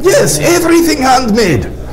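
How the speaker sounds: high-pitched voice with thick Russian accent.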